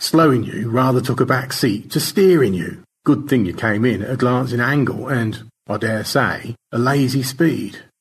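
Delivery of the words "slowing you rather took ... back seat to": usual speaking voice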